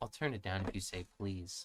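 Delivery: mock very low, quiet, muttered voice. Complaining about loud music, the speaker quotes the woman's answer, imitating the woman's reply. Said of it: "This bitch goes".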